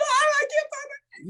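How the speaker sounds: very high, drawn-out, freaked-out panicking. Retelling a soldier who cannot find his gas mask: imitating someone panicking. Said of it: "He's all freaking out".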